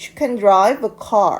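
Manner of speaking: drive stressed, can reduced and rushed. Teaching english can sentences, with stress on drive and can quick. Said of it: "drive 라는 단어에 조금 더 강세를 두고 있죠".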